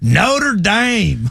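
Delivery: exaggerated country accent. Showing how they countryfy the name as hard as they can: exaggerated country accent. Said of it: "countryfy it as hard as we can".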